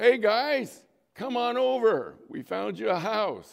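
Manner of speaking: loud, high yell. Telling a story about a man calling out to a group of guys, retelling a yell. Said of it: "And then he yells".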